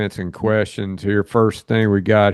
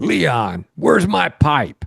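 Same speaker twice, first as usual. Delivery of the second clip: mock yelling, higher pitch; 4 semitones higher than usual. Retelling another speaker yelling at Leon about a stolen pipe: imitating someone yelling. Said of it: "and he's yelling at Leon".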